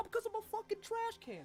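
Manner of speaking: very high, swooping, furious shouted rant. Voicing a talking trash can yelling at a fleeing character: trash can screaming. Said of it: "He goes".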